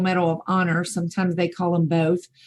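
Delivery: normal talking voice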